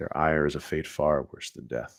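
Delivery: quiet whispering. Voicing a character who looks over and warns the group, whispering. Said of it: "kind of whispers".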